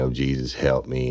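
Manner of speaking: put-on tearful, crying voice. Retelling how a woman fell to the floor: imitating someone crying. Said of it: "crying and".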